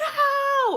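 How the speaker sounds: put-on high, loud, toddler-like crying scream at full volume.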